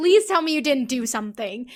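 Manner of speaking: put-on pleading voice. Retelling the same scene's line: imitating Yuki pleading.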